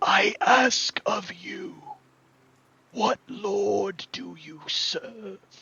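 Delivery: high, loud, rasping undead creature voice, "lord" drawn out. Game master voicing a sunken-eyed creature calling out to the players: raspy voice. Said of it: "and in a raspy voice".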